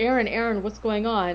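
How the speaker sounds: normal talking voice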